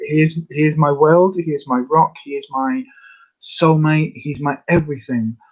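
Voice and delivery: voice catching, choked up, holding back tears. Speaking of a loved one they cannot fix, holding back tears. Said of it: "I'm not going to cry".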